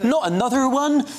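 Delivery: touch of Bristolian accent. Trying again after a failed first attempt at Brenda from Bristol, in a slight Bristolian accent. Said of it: "That's the slight Bristolian coming out there".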